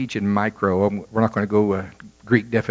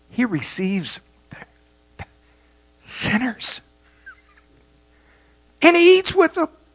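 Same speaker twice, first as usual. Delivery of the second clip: put-on, very high-pitched disgusted, revolted grumbling. Retelling the Pharisees and scribes murmuring about him, mock revulsion. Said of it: "you can almost hear the revulsion in their voice".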